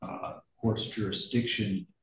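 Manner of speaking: barely audible, soft voice.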